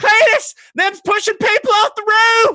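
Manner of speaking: acted very high, loud, shrill screaming. Telling a story of a lady at her window, acting out a scream. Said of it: "And she starts screaming".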